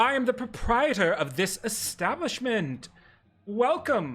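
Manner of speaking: warmly inviting, very welcoming, high hostess voice. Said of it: "very welcoming".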